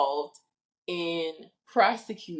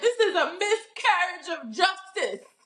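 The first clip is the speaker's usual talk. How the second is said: very strong put-on Caribbean accent, laid on; 12 semitones higher than usual. Retelling what a father said about a trial: imitating a very Caribbean accent. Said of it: "In his very Caribbean accent".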